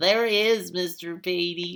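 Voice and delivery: odd, silly fake voice. Working a math problem aloud, answering the wish in a weird voice. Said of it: "weird voice".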